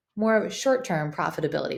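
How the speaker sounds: ordinary talk, nothing marked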